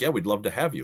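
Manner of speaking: normal talking voice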